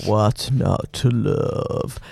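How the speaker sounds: imitated radio announcer voice, slow and drawn out. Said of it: "How good's that guy's voice?".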